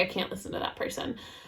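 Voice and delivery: unvoiced, quiet whisper. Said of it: "I was like".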